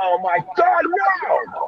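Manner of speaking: very high, very slow, drawn-out anguished fury. Retelling a reaction to a touchdown while watching football: imitating own furious screaming. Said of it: "I'm so pissed off".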